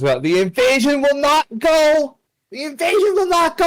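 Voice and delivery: shouting in character. Voicing an intruder with a Molotov rushing in: yelling in character. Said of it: "he just yells out".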